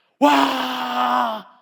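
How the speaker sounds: loud crowd battle shout of wah.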